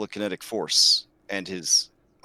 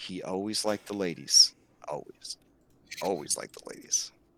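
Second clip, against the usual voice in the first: low, confiding whisper. Voicing Kyra speaking to Andronicus: Kyra whispering. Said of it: "Kyra whispers to you".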